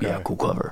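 put-on deep, breathy, half-whispered voice. Retelling what he said on the phone: imitating a deep voice. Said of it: "He had a really deep voice".

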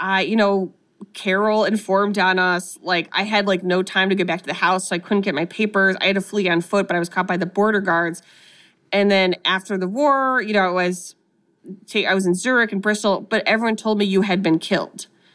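plain

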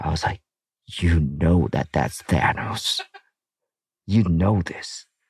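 hushed whisper. A father retells answering his daughter's repeated question: whispering. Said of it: "And I whispered to her".

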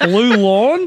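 put-on Australian accent. Saying a name as asked by another speaker: australian accent. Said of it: "with an Australian accent".

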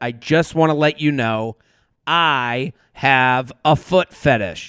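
mock very low, grave, dead-serious delivery. Retelling what a hookup said on sitting down: imitating a very serious tone. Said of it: "in a very serious tone said".

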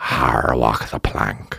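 very low, rough, dragged-out pirate voice. Proving to a listener they can act: pirate voice. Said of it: "why can I do this?".

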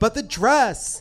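effeminate, put-on voice.

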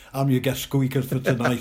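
ordinary delivery

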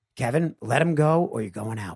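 mock whispering. Retelling what a fighter said during a chokehold: imitating a whisper. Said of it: "and whispers into my ear".

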